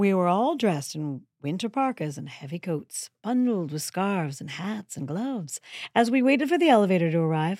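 deliberately affected narrating, storytelling voice. Telling a story about waiting for the office elevator, in an affected voice. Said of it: "I'm using an affected voice".

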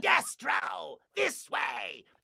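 shrill, very high, rasping cartoon villain voice. Describing a cartoon voice actor whose voice they loved, imitating that voice actor. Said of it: "he kind of sounded like this".

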